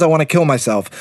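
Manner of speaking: ordinary delivery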